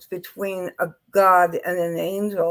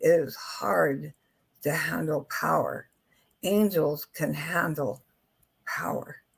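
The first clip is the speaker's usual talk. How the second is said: slow, drawn-out, deliberate, each word weighed; 3 semitones lower, 6 dB quieter than usual. Talking about handling power, repeating the point, said slowly. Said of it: "I'm going to say that slowly".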